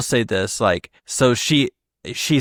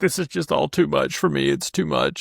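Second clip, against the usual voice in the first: mock weepy, overwhelmed, tearful words through sobs; 2 semitones higher, 4 dB quieter than usual. Retelling a tense moment: imitating Nia crying. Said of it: "crying and saying".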